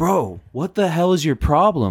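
play-acted all-out screaming. Retelling a moment at home, imitating screaming.

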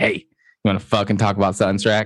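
ordinary delivery

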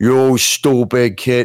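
put-on heavy, thick New York accent. Describing con man Frank Fontaine, quoting him in his thick New York accent. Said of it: "such a thick, like, New York accent".

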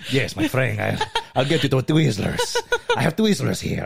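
loud, swooping, extra-thick fake Spanish accent. Retelling what he said on acid, offering someone twizzlers: extra strong spanish accent. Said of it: "You just got like extra fucking Spanish".

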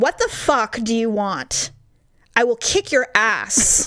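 slow, deliberate, menacing, each word spaced apart. Retelling confronting a staring man in a store: retelling a loud threat. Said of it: "and very loudly".

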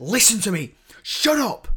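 sudden, loud, high, angry snapping outburst. Retelling a film scene where a character finally loses patience: imitating Ripley snapping. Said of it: "she just snaps".

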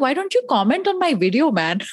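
put-on exasperated, frustrated tone in an Indian accent. Retelling a reply to people calling the speaker brave, with frustrated indian accent. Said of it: "My Indian accent comes out with frustration".

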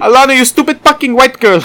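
very high, bad, put-on Filipino accent. Giving in after being pushed to try: bad put-on Filipino accent. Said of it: "do a shitty Filipino accent".

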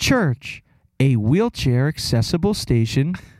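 sultry, seductive transit announcer voice. Speaker shows off his announcer impression, in a seductive SEPTA announcer voice. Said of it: "kind of s- seductive".

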